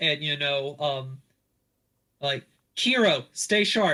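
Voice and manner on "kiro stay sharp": loud, high-pitched, whistling call-out. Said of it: "whistle out".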